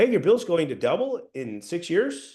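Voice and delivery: unsure tone with rising, questioning pitch. Contrasting with the confident take: posing it as a question. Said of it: "one is posing a question like".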